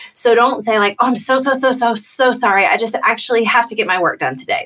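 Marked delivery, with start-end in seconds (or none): 1.0-4.7 mock gushing, over-apologetic tone, higher. Showing how not to turn something down: mock over-apologetic. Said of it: "do not apologize for getting your work done".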